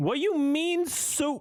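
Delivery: mock very high drawn-out voice. Repeating a TikTok reactor's line right after her: imitating her line, but louder. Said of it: "just saying what she's saying, but louder".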